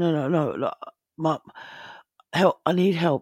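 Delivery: put-on tearful, crying voice. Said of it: "and she's crying".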